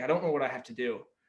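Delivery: put-on tearful crying voice. Retelling talking to a coach after practice: retelling own tearful words. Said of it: "I'm freaking bawling my eyes out".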